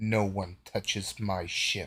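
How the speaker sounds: menacing, ominous character voice. Narrating a scene as audio comes from the screen: Redemption's menacing voice. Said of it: "says in a menacing voice".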